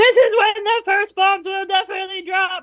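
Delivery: very high, shouty, all-caps style shouting. Reading aloud an all-caps text message: mock all-caps shouting voice. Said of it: "that's just gonna be my caps lock voice".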